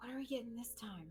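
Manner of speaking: not-so-quiet whisper. In a role-play, leaning over to a companion: a loud whisper. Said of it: "not as quietly whisper".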